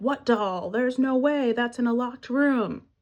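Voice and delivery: mock alarmed, frantic, panicked freakout. Retelling a film scene where he learns about the doll: imitating someone freaking out. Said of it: "he starts freaking out and is like".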